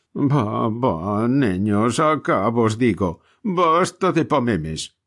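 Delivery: slow, tearful shout, calling out from afar. Reading a story aloud, the father calls the children home: shouting in a tearful voice. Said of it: "gritaba de lejos el padre con voz de lágrimas".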